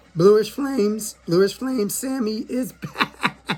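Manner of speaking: voice breaking and cracking on the words. Starting a deck profile, naming the hat: voice cracking. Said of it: "Why is my voice cracking?".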